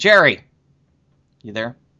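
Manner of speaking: loud calling yell. Speaker on a show calls out to check someone is there, yelling. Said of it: "Sorry, I didn't mean to yell".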